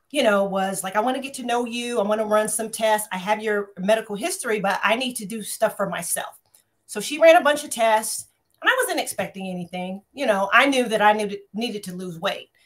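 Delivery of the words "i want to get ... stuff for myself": usual speaking voice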